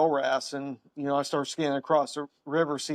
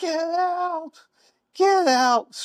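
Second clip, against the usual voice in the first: play-acted shrill, very high, very slow stretched yell; 5 dB louder than usual. Retelling a sergeant major ordering people out: imitating someone yelling. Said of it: "just starts yelling".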